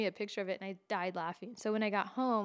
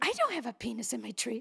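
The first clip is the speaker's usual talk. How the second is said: put-on pissy, irritated, annoyed voice. Retelling a mom's reply to an aunt about the tree: imitating someone pissy. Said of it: "like, all pissy".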